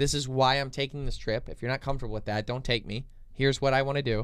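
ordinary delivery

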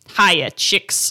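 put-on disgruntled, mad voice. Retelling what O'Malley says to the geese after they save him: imitating O'Malley, disgruntled and mad. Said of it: "he's, like, disgruntled and mad".

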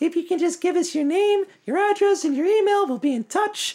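very high, tiny sprite or pixie fairy voice. Describing fairies flying around with a sign-up sheet, very high pixie fairy voice. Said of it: "in their very high pixie fairy voices".

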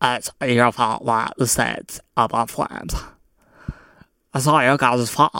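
put-on dumb girl voice.

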